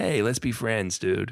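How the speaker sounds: laid-back, chill, loose, breezy and friendly tone. Retelling a cartoon scene, quoting the positive Ghidorah head: imitating laid-back Ghidorah head. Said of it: "really cool about everything".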